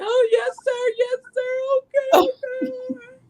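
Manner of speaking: sobbing, pitched way up, very slow. Retelling a reply made while riding around in the car: imitating own past crying. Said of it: "around on the car crying".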